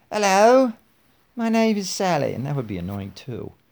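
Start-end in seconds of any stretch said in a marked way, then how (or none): 0.1-2.3 high, loud mock British accent. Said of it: "I could give her a British accent".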